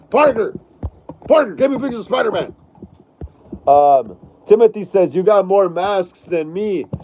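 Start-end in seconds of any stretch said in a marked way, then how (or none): 0.1-2.5 fast, rattled-off, bossy delivery. Recalling the editor from a Spider-Man film, doing a J. Jonah Jameson impression. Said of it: "J. Jonah Jameson was awesome".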